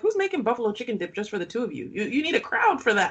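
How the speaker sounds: ordinary talk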